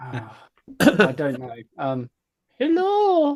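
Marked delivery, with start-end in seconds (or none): 2.6-3.4 put-on high, loud old lady voice. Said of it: "Can you do your best, uh, Miss Claus accent, please?".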